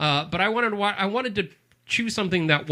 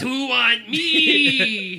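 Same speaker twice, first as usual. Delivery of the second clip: mock alien voice with Spanish accent, higher; 7 semitones higher, 4 dB louder than usual. Mimicking the other speaker's kid voice: Spanish alien voice. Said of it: "That sounded like a Spanish alien".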